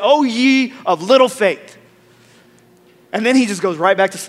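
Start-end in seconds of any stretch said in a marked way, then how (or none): 0.0-1.8 mock, very angry rebuke, slow. Retelling Jesus turning to his disciples after calming the storm, mock-angry Jesus. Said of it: "In a very angry tone".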